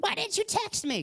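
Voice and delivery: very high, storybook wicked-witch voice. Imitating a past partner asking about texts: Wicked Witch of the West voice. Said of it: "'Cause you sound like the Wicked Witch of the West".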